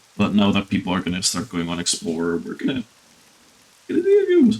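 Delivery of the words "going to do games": much higher, louder put-on falsetto voice. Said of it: "I wish I could do the high voice stuff".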